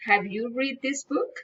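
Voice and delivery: rising tune on final word book. Demonstrating general questions in an intonation lesson: rising intonation at the end. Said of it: "General questions, rising intonations".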